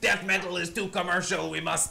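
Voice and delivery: put-on French Canadian accent.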